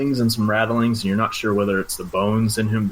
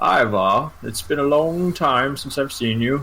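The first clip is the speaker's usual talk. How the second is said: put-on little old grandma voice; 4 semitones higher than usual. Voicing Godfrey as he sees Ivar: Godfrey in old grandma voice. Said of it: "this is like an old grandma voice".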